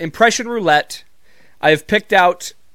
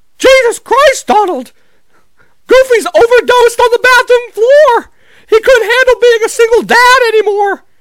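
high-pitched, loud squeak; 9 dB louder than usual. Giving an example of cartoon characters saying crude things, in a Mickey Mouse voice. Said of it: "Mickey Mouse being like".

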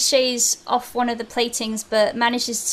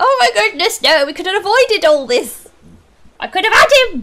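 very high, loud shriek; 9 semitones higher, 9 dB louder than usual. Telling a story, the speaker voices the nanny as fire spreads; shrieking nanny. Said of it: "the nanny shrieks, like".

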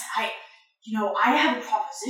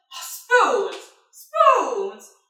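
raised voice calling out; 2 semitones higher, 7 dB louder than usual. Voicing a character calling to a player who walks away: calling out after someone. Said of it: "you hear him call out to you".

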